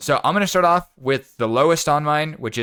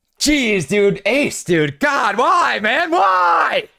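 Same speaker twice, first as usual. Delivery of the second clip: very high, rising anguished yell, "why" stretched; 11 semitones higher, 3 dB louder than usual. Reacting in pain to the story being told, anguished yelling. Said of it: "Headphone users, I apologize".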